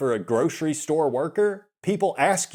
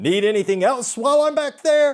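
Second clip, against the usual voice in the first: mock very high, loud, heavily sarcastic voice; 10 semitones higher, 5 dB louder than usual. Retelling what the grocery store worker said: imitating a sarcastic store worker. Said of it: "she was very, very sarcastic about it".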